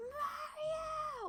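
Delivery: very high, screamed, wailing, drawn out. Recalling how a game character calls for Mario: imitating Luigi screaming Mario. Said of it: "when he's just screaming it".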